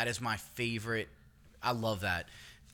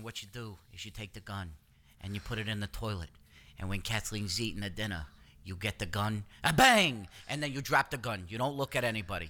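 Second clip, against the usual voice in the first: put-on New York accent. Acting out a Godfather scene, in a Godfather-style New York accent. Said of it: "his New York accent became".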